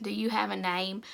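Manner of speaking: ordinary delivery, nothing marked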